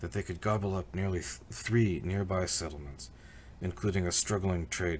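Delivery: ordinary delivery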